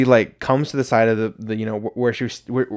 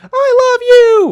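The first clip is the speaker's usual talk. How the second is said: put-on top-of-the-lungs drunken shriek, very high, very loud; 10 dB louder than usual. Describing a lady at a drag queen performance, retelling a top-of-lungs scream. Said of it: "screaming that at the top of her lungs".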